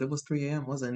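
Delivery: ordinary talk, nothing marked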